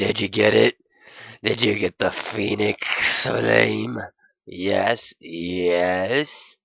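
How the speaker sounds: stubby, stout dog voice, gruff, yes drawn out. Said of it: "He was a stubby, stout excuse for a canine. ... gruff, but fun!".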